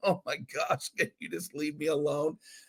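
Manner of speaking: very quiet, exhausted, worn-out voice. Her mother, home from work to a child with a microphone: imitating an exhausted mother. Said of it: "exhausted from a day at work".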